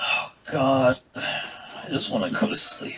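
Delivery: exhausted, fed-up, breathy, worn-out whisper. Voicing a character who has a headache and rubs his temples: utterly done, fed up. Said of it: "he's so done".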